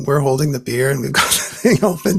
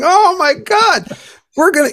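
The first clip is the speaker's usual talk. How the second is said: very high, laughed-out words; 4 dB louder than usual. Retelling how a man slapped you on the back, imitating someone laughing while talking. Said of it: "and he just started laughing".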